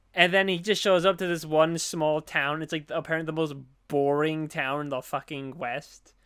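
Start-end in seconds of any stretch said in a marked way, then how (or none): none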